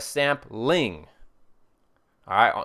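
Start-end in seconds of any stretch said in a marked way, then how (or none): 0.0-1.1 sampling with the weight on ling. Saying it just to be obnoxious, sampling stressed on ling. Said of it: "you have to say it like this, a sampling. You got to have an emphasis on the ling".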